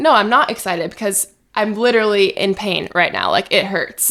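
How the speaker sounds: ordinary talk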